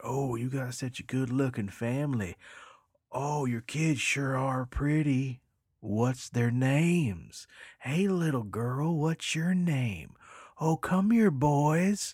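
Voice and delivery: high, loud, creepy, fawning put-on voice, "boys" stretched. Retelling what strangers said to a customer's kids: imitating creepy strangers. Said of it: "this creepy family walks over and starts immediately commenting".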